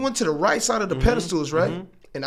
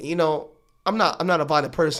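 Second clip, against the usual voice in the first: normal talking voice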